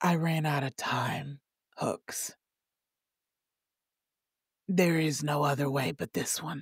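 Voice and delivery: gentle, soft, quiet soft-spoken voice. A game master voices a different character speaking to another character: soft-spoken voice. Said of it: "a softer voice, someone who's more soft-spoken".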